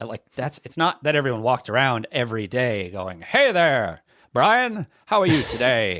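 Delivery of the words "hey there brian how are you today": put-on slow, pitched-up old-time radio announcer voice. Demonstrating how early radio announcers talked, in an old-time radio announcer voice. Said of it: "Part of that radio voice".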